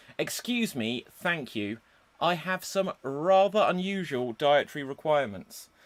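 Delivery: ordinary delivery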